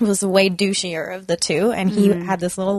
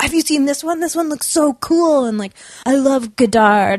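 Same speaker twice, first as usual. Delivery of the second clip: put-on eager, bubbly, high-pitched gushing enthusiasm; 6 semitones higher than usual. Recounting a man who brought piles of movies to you at the store; imitating someone excited. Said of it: "And he'd get so excited".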